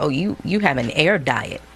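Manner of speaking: ordinary talk, nothing marked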